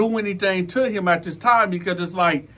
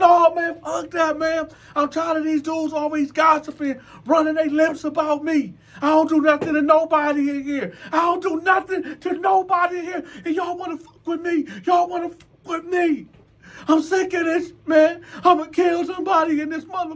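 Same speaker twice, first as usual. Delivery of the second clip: put-on tearful, angry ranting voice, higher; 9 semitones higher than usual. Retelling how a man ranted at others: imitating someone crying in anger. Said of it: "Now he crying".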